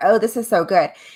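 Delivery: ordinary talk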